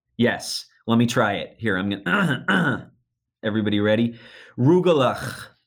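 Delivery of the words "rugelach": rugelach said phlegmy, from the throat, congested sound. Demonstrating to everyone how to pronounce a food's name, phlegmy sinus-infection pronunciation. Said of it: "has to sound like you have a severe sinus infection".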